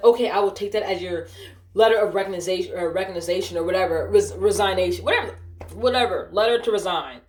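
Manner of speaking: normal talking voice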